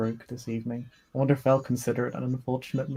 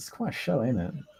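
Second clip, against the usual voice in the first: dubious, leaned-in stage whisper aside. A nosferatu beside the listener leans in to speak: whispering. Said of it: "He just kind of whispers".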